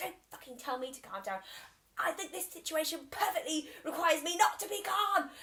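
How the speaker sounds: acted furious outburst, building and rising high. Retelling snapping back at a partner who said to calm down: retelling an angry meltdown. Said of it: "I'm having a meltdown".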